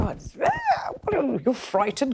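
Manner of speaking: put-on teasing, belittling tone. Retelling being mocked on television for finding the heat frightening: imitating Richard Tice mocking. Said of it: "kind of mocking me".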